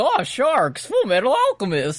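silly, daft put-on voice, high and swooping. Retelling how the show's voiceover says the title: imitating a goofy voice. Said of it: "a fucking goofy voice".

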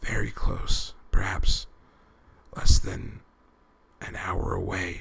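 slow, pained, painful delivery. Narrator reads the squad leader answering the question just asked; slow and pained. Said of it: "Gray Fox's words came slowly and painfully".

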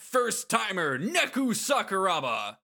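slow, high announcer voice. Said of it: "this announcer voice".

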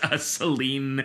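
ordinary talk

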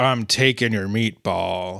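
low, angry yet lazy delivery. Describing a fed-up character, the speaker voices his line with an accidental Sling Blade voice. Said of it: "He's also sick of your bull crap".

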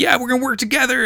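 very high, fast, giddy, pumped-up excited burst. Retelling a wrestler's reply to his old teammate: imitating an excited Brock. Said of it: "Brock is all excited and he's like".

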